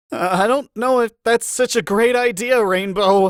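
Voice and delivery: very high, strangled, choked-off voice. Reading a story, a character doubting a flying plan: strangled tone. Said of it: "Spike said in a strangled tone".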